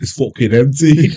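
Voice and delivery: put-on strong Scottish accent. Retelling what a customer said to a bar manager: proper Scottish accent. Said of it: "proper Scottish".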